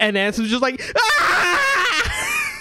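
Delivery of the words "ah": terrified screaming. Voicing a fleeing character screaming back at an old man: screaming in fright. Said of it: "Screaming back, back at him".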